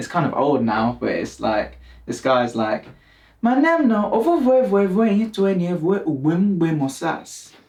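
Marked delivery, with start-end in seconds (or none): 3.4-7.5 put-on Nigerian accent, pitched very high. Imitating a guy from an old meme: imitating a nigerian accent. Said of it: "imitating, like, Nigerian people".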